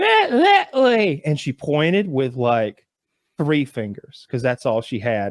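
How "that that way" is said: high-pitched hill-folk lady voice. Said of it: "And she's like".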